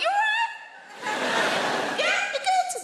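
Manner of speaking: very high, slow, polite voice. Retelling finding a stranger on the sofa, the speaker greets him: high-pitched voice. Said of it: "when our voices go high like that".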